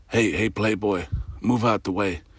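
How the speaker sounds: hushed half-whisper close to the ear.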